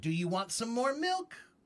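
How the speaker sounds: pitch rising through "milk", question-like tune. Explaining english tone, the speaker demonstrates rising question intonation. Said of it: "We go up when we're asking a question".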